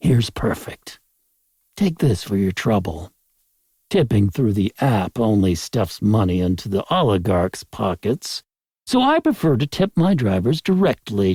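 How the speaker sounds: ordinary delivery, nothing marked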